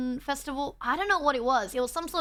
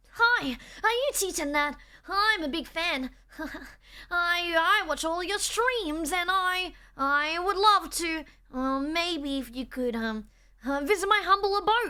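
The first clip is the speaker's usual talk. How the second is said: slow, affected, put-on e-boy voice; 4 semitones higher than usual. Greeting a streamer as a fan would, in a put-on e-boy voice. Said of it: "We would greet Nat with an e-boy voice".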